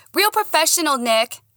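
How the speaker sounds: blurted, very high and overloud. Narrator answering nick's sneer, much louder than intended. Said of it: "much louder than I had intended".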